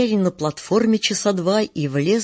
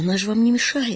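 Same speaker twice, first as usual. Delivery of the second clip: trembling, shaky, quavering voice; 3 semitones higher than usual. An actress defends her dog against complaining women: trembling voice. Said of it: "дрожащим голосом вступилась актриса".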